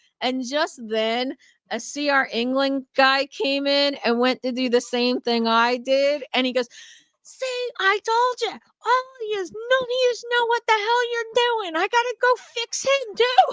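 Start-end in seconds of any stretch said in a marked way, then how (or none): 7.2-13.5 play-acted yelling old man voice, very high. Retelling a truck-stop story, imitating an old man yelling at a driver. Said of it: "he's still yelling".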